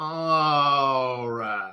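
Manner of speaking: overly dramatic, low voice, stretching out the word "all". Retelling a trustee's words, the speaker deliberately adds drama: mock-dramatic delivery. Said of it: "put some drama on it and go".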